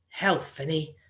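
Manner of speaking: plain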